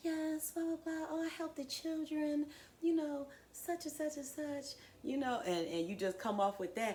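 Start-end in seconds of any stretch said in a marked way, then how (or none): 0.0-4.8 dainty put-on sweetheart voice, high and sweet. Speaker mocks people who act polite, in a mock little sweet voice. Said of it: "try to talk in a little voice like".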